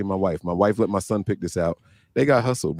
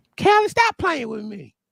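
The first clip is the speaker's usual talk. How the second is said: very high-pitched put-on Southern accent. Asked to do an impression, doing a high-pitched southern impression. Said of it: "it's high pitched and southern".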